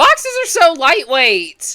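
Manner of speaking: high, loud yell.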